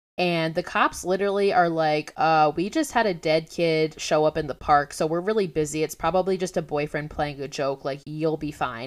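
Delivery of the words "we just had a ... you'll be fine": ordinary delivery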